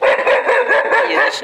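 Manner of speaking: high, loud, drawn-out startled cry.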